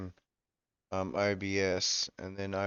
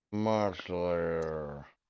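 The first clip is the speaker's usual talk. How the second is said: very slow, sleazy, predatory male drawl.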